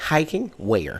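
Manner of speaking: gentle, soft mother's voice. Retelling a conversation with their mom, imitating mom's voice. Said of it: "I'm mimicking my mom".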